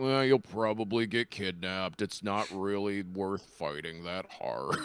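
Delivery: low, depressed, defeated-sounding donkey voice. Imagining Eeyore more depressed, warning about getting kidnapped: Eeyore voice. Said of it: "if Eeyore was just saying shit like".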